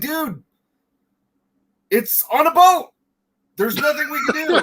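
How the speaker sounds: exasperated, high-pitched casual-guy tone.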